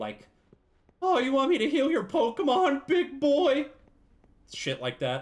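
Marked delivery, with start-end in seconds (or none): 1.0-3.7 overdone flirty voice, very high and very loud. Complaining about the next Pokemon game's voice acting, mimic a laid-on-thick Nurse Joy voice. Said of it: "laying it on thick as fuck".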